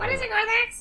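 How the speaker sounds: very high, squeaky little character voice. During a game, asked for a squeaky voice, a player tries a squeaky voice. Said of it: "Someone do a squeaky".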